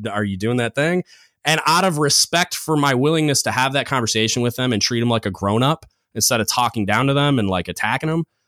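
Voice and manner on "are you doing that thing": put-on, dry, needling sarcastic jab. Retelling walking past second classes with hands in pockets: imitating own sarcastic question. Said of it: "kinda sarcastically".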